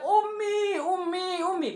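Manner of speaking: high, loud calling voice, as if far away.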